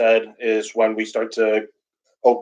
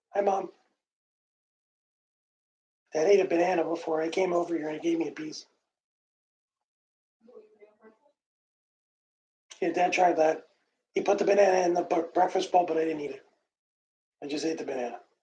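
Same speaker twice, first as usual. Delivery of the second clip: put-on soft, high, childlike dog voice; 7 semitones higher, 10 dB quieter than usual. On a livestream, voicing the pet dog talking to Mom: speaking as the dog. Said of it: "that's my dog voice".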